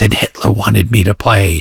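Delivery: put-on sudden, intense, animated outburst. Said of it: "this woman kicks into overdrive and she goes".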